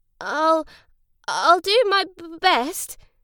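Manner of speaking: stammering. Lancelot replies to his beaming, hopeful family, stammering. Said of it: "he stammered".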